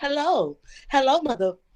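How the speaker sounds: put-on professional customer-service phone voice. Explaining how she talks to her mother, she shows her customer service Karen voice. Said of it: "customer service Karen voice".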